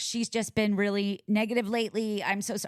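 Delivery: normal talking voice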